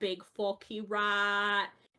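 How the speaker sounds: slow, put-on British accent. Retelling a catchphrase said while playing Sea of Thieves: put-on British accent. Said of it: "it had a British accent".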